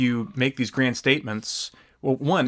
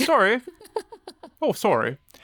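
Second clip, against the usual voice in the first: very high, swooping bad Canadian accent slipping into British; 11 semitones higher than usual. Speaker joking about an absent person's quote, failed Canadian accent. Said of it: "that was more British. I can't do a Canadian accent".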